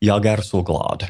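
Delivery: Swedish with a Finnish accent. Speaker demonstrating how a Finn sounds saying he is happy: Finn speaking Swedish. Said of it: "this is a Finn saying, I'm happy".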